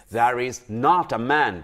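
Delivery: confrontational, annoyed, aggressive, somewhat angry insistent tone. Teaching how tone changes a simple sentence, say it with an aggressive tone. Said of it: "give a certain aggressive tone".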